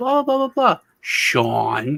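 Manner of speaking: high, slow, swooping voice-assistant tone, name stretched long. Retelling how the smart speaker answers and says their name: imitating the smart speaker's voice. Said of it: "it says it just like that".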